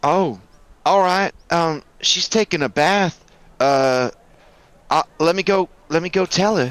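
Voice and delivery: obliging, put-on female character voice. Voicing a Nephilim lady greeting the players: voicing a Nephilim lady. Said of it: "she saunters over to you and says".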